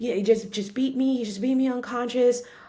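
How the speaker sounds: high, tearful, panicked, frantic crying. Recounting a 911 call after being beaten, retelling crying, frantic yelling. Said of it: "I'm crying and I'm yelling and I'm frantic".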